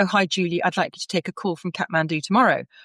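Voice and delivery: ordinary talk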